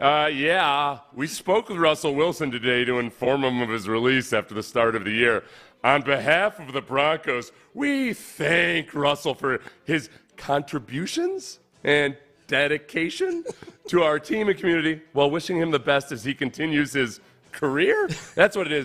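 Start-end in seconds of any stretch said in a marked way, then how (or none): 1.1-18.1 snide, quizzical sarcasm throughout with swooping pitch. Reading a team's release statement aloud at another speaker's urging, in a snide tone. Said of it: "it makes more sense if you read it in a snide tone".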